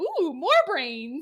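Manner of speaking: thrilled, eager, loud put-on zombie voice. Retelling a show scene where the zombie chases them: imitating an excited zombie. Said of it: "He gets real excited".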